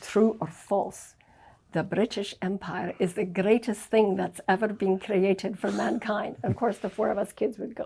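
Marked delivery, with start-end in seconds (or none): 0.0-6.4 Scottish brogue. Retelling how Dad talked at the family dinner table, in a Scottish brogue. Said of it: "Dad would say things in his Scottish brogue".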